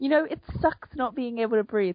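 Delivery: really upset voice. Retelling a scene from a book, imitating Hazel Grace, upset. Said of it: "I'm just, like, mimicking her".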